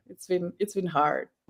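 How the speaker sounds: soft, tearful crying speech, voice breaking. Speaker saying she's super sensitive and it's been hard, crying while talking. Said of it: "I'm crying like just I yeah".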